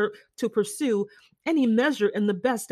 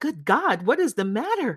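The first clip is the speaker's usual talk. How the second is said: unrestrained, heartfelt, feeling-filled emotional outcry. He reacts to a woman hastily saying she must leave, crying out with feeling. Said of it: "cried he, with more feeling than politeness".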